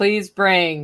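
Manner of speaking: very grumpy, sour, unhappy tone. Retelling repeating a request after someone said 'what', in a put-on grumpy voice. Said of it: "I said it in a very grumpy voice".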